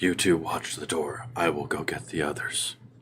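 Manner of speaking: barely audible, very quiet hushed half-whisper. In a role-play scene, a character tells two others to watch the door, half-whispering. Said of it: "I am also whispering".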